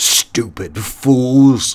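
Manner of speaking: snarled, growling delivery. Cluny responds to his henchmen reporting two of their band dead, snarling. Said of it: "snarled Cluny".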